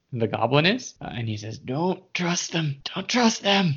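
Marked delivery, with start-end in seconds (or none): 1.5-3.7 very groggy, dazed, barely awake voice, pitched up. Game master voicing someone heard from behind the goblin: very groggy voice. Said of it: "you hear a very groggy voice".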